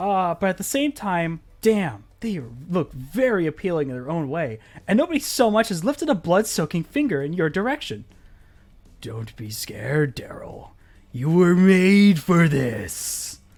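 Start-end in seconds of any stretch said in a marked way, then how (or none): 9.0-13.4 eerie, otherworldly spooky voice, loud and slow. A voice from the ocean speaks to Daryl, spooky ocean voice. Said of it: "spooky ocean voice".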